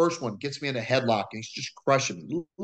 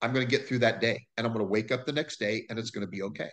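normal talking voice

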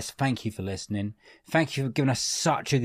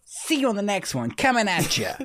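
very high, swooping, sing-song fake American accent; 10 semitones higher than usual. Trying out a sign-off line to end the episode: Sonic the Hedgehog voice. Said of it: "You sound like Sonic the Hedgehog".

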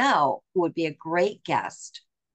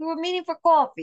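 put-on Philadelphia accent with very high-pitched voice; 12 semitones higher, 3 dB louder than usual. Repeating own words just said to show the Philadelphia accent. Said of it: "I never realized I had a Philadelphia accent".

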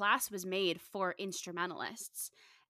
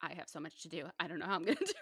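plain

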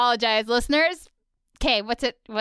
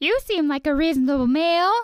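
high female cartoon snail character voice; 5 semitones higher, 4 dB louder than usual. Speaker imitates one of the female snails from the episode, in a female snail voice. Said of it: "this is one of the female snails".

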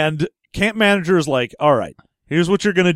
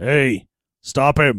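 acted crazy-sounding voice; 3 semitones lower than usual. Retelling what the voice in a character's head says: imitating a crazy voice. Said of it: "hearing the crazy voice going like".

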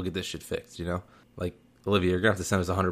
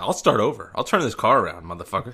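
threatening tone like a teacher; 3 semitones higher than usual. Mocking another speaker who keeps restarting a story: imitating a threatening teacher. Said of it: "threatening us like a teacher".

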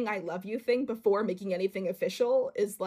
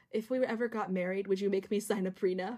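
put-on whisper; 3 dB quieter than usual. Retelling a bedtime moment between two people: imitating Tanya whispering. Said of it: "Tanya whispers to Shaq".

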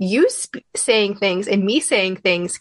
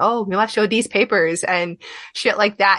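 ordinary talk

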